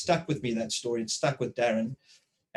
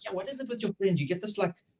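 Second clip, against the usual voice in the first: playful teasing tone. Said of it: "she's like".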